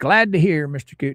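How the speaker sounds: plain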